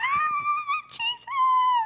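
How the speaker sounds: very loud, very high, shrill, drawn-out squeal. Retelling a woman calling out like the first groupie, imitating a screaming groupie. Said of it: "Think like those girls screaming on the side of the road".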